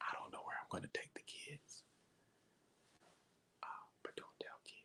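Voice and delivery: hushed, very quiet, barely voiced whisper. Speaking so that she can't hear, whispering. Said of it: "I'm whispering".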